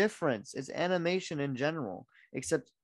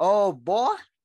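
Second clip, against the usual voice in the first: put-on loud Southern drawl on the word "boy"; 4 semitones higher, 10 dB louder than usual. Saying the word when asked, in a Southern accent on "boy". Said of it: "How do you even say it like that?".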